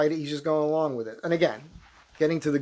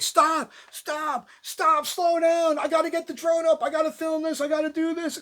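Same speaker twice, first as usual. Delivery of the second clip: very high, shrill, frantic screaming; 12 semitones higher than usual. Recounting how he would scream at you while you set up on the billboard: retelling someone screaming. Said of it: "he'd be screaming at me".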